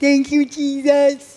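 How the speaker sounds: put-on high, little-kid voice like a two-year-old.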